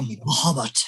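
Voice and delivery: hushed, alluring, almost seductive whisper. Retelling a player's spoken healing word: imitating a seductive whisper. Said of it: "Almost seductively".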